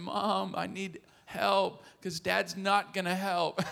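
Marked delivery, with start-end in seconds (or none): 0.0-1.8 put-on very slow, small, rough, raspy kid voice. Speaker acts out a three-year-old boy calling out; little raspy child voice. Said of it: "this little raspy voice saying".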